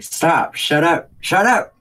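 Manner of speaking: high, very loud, shrill screaming. In a role-play scene, the character covers their ears and starts screaming. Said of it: "just start screaming".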